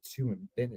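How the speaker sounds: quiet, hushed delivery. Joking about what Buzz would say: Buzz Lightyear voice. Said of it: "he would just be like".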